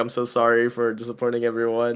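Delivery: tearful voice, on the verge of tears. Retelling the author's apology to a crowd: imitating Isayama tearing up. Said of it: "he was, like, tearing up".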